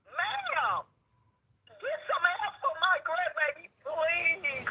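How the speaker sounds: high, desperate, screamed pleading. Retelling begging a woman on the phone for help for a grandbaby; retelling screamed begging. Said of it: "screaming and begging on the phone".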